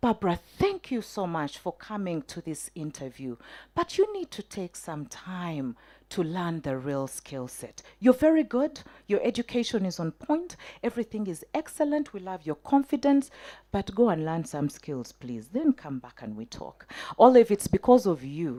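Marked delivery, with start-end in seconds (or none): 0.0-16.9 completely calm, soft-spoken delivery. Retelling an interviewer's calm feedback after a job interview: imitating Olive speaking calmly. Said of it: "And then so calmly".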